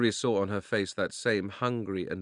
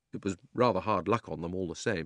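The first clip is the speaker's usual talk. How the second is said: ordinary delivery, nothing marked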